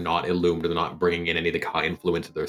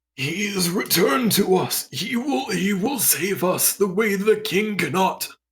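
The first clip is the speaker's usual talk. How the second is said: put-on stammering, stuttering old man voice, much higher; 4 dB louder than usual. Game narrator voices an old man answering the player's warforged character, stammering. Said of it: "He sort of stammers out a response".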